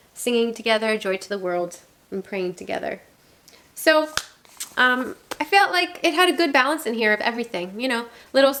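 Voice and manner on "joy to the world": normal talking voice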